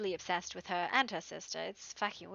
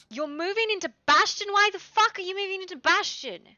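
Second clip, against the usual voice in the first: shrill, high-pitched, full-volume yelling; 12 semitones higher, 9 dB louder than usual. Reacting to someone saying they are moving into Bastion, yelling. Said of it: "Why why are you yelling at me?".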